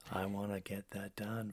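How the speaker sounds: put-on unenthusiastic voice. A host contrasts unexcited and excited voices, demonstrating a fake lazy tone. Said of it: "fake the, the, the the lazy part".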